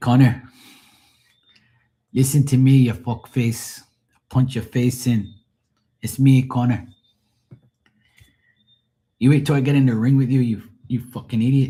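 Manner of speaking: put-on Irish accent, taunting tone. Recalling a fighter who cracked him up, imitate his trash talk in a faked accent. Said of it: "we talking like".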